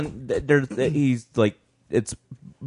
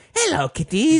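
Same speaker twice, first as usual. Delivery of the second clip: put-on ghoulish host voice, higher. Imitating the horror show host greeting viewers: Crypt Keeper voice. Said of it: "the crypt keeper would be like".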